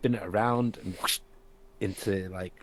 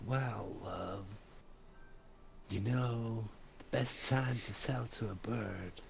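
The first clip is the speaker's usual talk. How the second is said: put-on seductive voice, soft and sultry; 3 semitones higher, 6 dB quieter than usual. Voicing a character in a scene, putting on a sexy human voice. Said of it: "this like sexy human voice".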